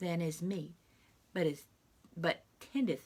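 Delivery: ordinary delivery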